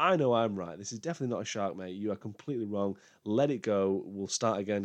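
ordinary talk

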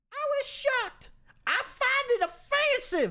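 very high, loud put-on girl's voice. Reading a woman's quote to CBS 2 News: [name] in a girl's voice. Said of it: "I thought I'd just read it in a girl's voice".

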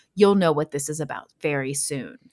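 dark, portentous, ominous, foreboding tone. Retelling what a strange woman said to two people who didn't know her, mock-ominous. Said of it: "kind of ominously".

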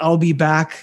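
ordinary talk, nothing marked

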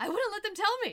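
acted gleeful, giggly gloating. Speaker recounts the villain taunting a distraught Superman about his mother, in Lex Luthor's mock giggling taunt. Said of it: "just says with a giggle".

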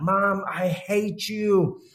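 high, very slow, drawn-out scream at top of lungs. Retelling how a son screamed at his leaving mother: imitating a teen screaming. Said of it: "he screamed top of his lungs".

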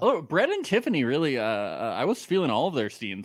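ordinary delivery

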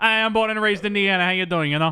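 very high put-on Long Island accent. Imitating a film character who talks like she's from Long Island: Rosie O'Donnell Long Island accent. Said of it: "who's talking like she's from Long Island".

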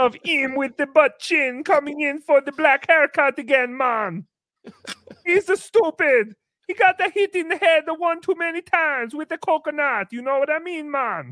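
mock Jamaican-accented speech. Retelling a haircut, the speaker imitates a barber in a Jamaican accent. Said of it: "I did my Jamaican accent".

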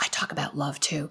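soft, hushed, secretive and confiding whisper. Quoting a man who pulled the speaker into another room, retelling a whisper. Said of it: "he pulls me into the other room and he whispers".

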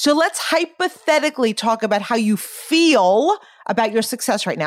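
feel held long and strongly stressed.

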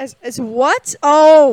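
stunned surprise. Reacting to the other speaker's joke name for a character: shocked. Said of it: "Did you hear the shack in my voice?".

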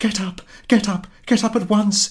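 shrill, very high, loud crying out. Narrator reads a wife rousing her sleeping husband, crying out. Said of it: "she cried".

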